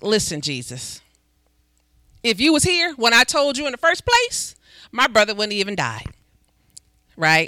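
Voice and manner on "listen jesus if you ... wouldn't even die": put-on sassy, attitude-filled tone. The speaker retells Lazarus's sister speaking to Jesus, Martha with a little attitude. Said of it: "shortened version with a little attitude".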